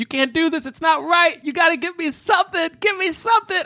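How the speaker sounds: very high, screeched-out screaming. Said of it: "she's just screaming".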